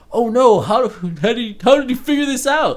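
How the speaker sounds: mocking, pitched way up.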